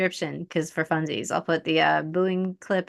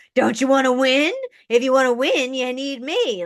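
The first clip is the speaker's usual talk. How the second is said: loud, pitched-up hectoring shout; 8 semitones higher, 5 dB louder than usual. Retelling how he talked to voters: imitating someone yelling. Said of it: "He started yelling at them, going like".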